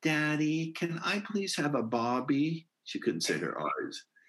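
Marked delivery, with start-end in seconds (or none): 0.0-2.7 sweet, wheedling, high, slow begging little voice. Retelling a small niece asking her daddy for something: imitating Danielle's begging voice. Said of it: "the voice you use when you want Daddy to give you something".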